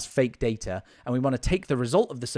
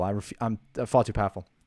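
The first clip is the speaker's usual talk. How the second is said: normal talking voice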